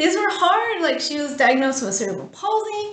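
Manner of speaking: near tears, very high voice. Telling the story of a daughter's hard diagnosis, getting emotional. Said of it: "I'm getting emotional now".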